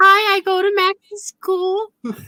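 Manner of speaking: very high, put-on childlike voice. Retelling a man calling Max's mom while pretending to be a kid, retold high kid voice. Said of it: "he's talking in this really high voice, trying to sound like a kid".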